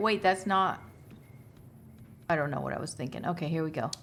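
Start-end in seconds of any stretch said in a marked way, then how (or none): none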